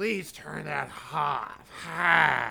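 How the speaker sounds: put-on low, rough, snarling old woman voice. Retelling an old lady in the theater asking to turn the phone off: imitating Grandma Janice snarling.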